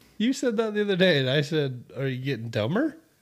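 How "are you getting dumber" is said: ordinary talk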